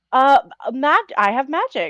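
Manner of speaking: high, fumbling, clueless airhead character voice. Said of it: "like the biggest dumbass".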